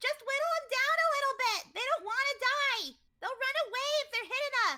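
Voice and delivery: very loud, shrill, high put-on yell. Voicing a character in a game, shouting orders to the group: yelling in character. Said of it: "can she at least yell that?".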